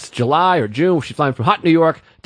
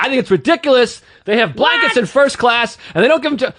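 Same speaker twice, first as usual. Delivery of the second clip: put-on female yell, higher; 7 semitones higher than usual. Retelling a passenger's demand to a flight attendant, imitating a woman yelling. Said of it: "And she starts yelling".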